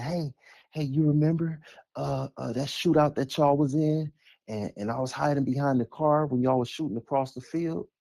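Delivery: affected, put-on soft tone. Mimicking how the listener talked to the man who really lived it, soft put-on voice. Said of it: "in that soft voice that you put on".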